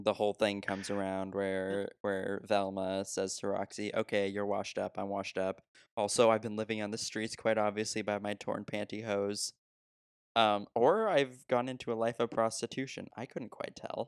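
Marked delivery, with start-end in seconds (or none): none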